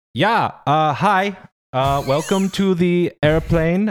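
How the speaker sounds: put-on terrible Swiss accent. Retelling the pilot's welcome announcement once everyone boarded, terrible Swiss accent. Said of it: "I'm about to do a terrible Swiss accent when I do an impression here of my Swiss pilot".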